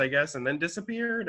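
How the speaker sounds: plain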